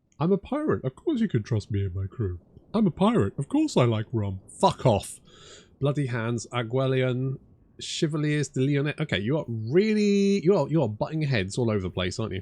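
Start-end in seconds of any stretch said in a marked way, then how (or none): 0.2-4.4 mocking, parroting social-media influencer voice. Mocking a pirate character's line, imitating Aranessa. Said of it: "it's like she's from TikTok".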